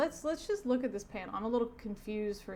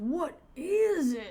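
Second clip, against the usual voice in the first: high, loud, slow startled cry. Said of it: "One of the rifle cops says".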